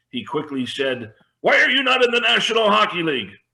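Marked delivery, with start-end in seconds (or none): 1.4-3.2 put-on very high, excited, fast French Canadian accent. Retelling what excitable Jacques quickly asked you on the team trip, in Jacques's excited French Canadian accent. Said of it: "in that French Canadian accent".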